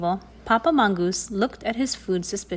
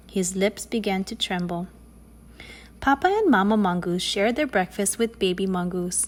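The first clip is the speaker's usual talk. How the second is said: ordinary delivery, nothing marked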